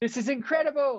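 shrill, loud, very high, thrilled, acted-out excitement. Retelling her reaction to quite a big recognition, imitating loud, excited Nandy. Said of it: "everything she says is so loud and excited".

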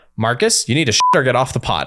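acted, very stern, no-nonsense scolding voice. An exhausted mother retells what she said to Marcus on the toilet, retelling a very stern voice. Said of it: "I said in a very stern voice".

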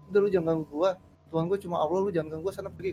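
usual speaking voice

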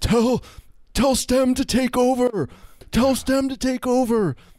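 shrill, very high, drawn-out yell at full volume. Retelling a guy who shouted during a movie, imitating a guy yelling. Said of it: "this guy would just be yelling like full volume".

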